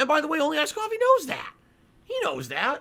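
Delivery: over-emphatic delivery with voice cracking. A streamer addresses viewers on their stream, voice cracking with heavy emphasis. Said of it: "Hear the voice crack then".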